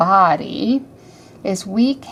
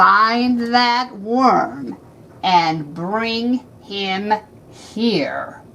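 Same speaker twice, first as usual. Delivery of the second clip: slow, mean villain voice, dragging out find. Reading a story aloud, voicing the wizard's order to his servant, mean Wizard Lizard voice. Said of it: "that wizard is talking in a very, very mean voice".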